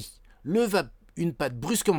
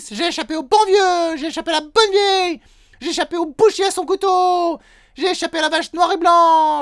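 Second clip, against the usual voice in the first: shrill, very loud, high-pitched yelling; 10 dB louder than usual. The gingerbread man comes closer and repeats his taunt: shouting. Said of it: "répéta en hurlant cette fois".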